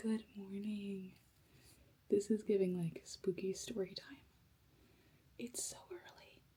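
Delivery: quiet, soft whispering. Vlogging at six thirty in the morning: whispering. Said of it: "That's why I'm whispering".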